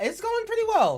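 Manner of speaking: sudden very high, very loud burst. Chatting while building a deck: voice going high. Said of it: "my voice went high on that one".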